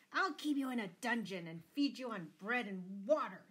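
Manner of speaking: roaring, thundering, booming voice. Lord Fitzwalter answers his daughter Marian: thundering. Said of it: "thundered Lord Fitzwalter".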